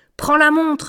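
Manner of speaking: high, commanding tone. Miltitsch gives his accomplice an order after they knock out a man; ordering. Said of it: "ordonna Miltitsch".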